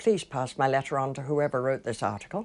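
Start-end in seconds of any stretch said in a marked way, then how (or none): none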